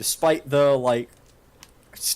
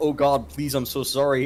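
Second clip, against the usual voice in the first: ordinary delivery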